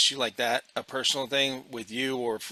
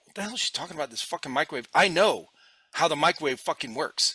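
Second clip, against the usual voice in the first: pissed-off, angry, swearing outburst; 3 semitones higher than usual. Retelling being angry at a lady's microwave explanation: retelling own angry outburst. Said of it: "I was so pissed".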